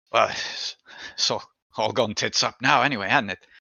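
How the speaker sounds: resigned, weary sighing delivery. Voicing a character who sighs and shakes his head: resigned sighing delivery. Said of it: "sighs and shakes his head and goes".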